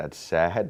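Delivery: normal talking voice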